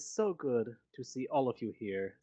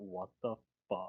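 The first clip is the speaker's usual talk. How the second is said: hushed half whisper under the breath; 4 semitones lower, 7 dB quieter than usual. Voicing a formal character who is stunned: half whisper. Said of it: "you just see him half whisper".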